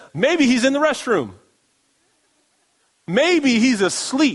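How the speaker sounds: mock sarcastic, high, goading, mocking jeer. Retelling one man taunting a group for hours, imitating a mocking taunt. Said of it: "Elijah is just mocking them and making fun".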